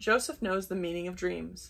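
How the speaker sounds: plain reading voice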